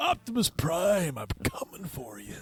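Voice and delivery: drawn-out, slow speech. Asked by another speaker for Macho Man on the Transformers movie: Macho Man impression. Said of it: "just tell him to say Optimus Prime".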